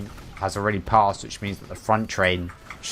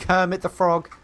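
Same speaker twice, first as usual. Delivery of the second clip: plain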